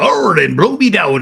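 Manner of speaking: put-on storybook pirate talk. Showing the voice used to narrate a pirate audiobook: pirate voice. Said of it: "I had to talk like I was a pirate".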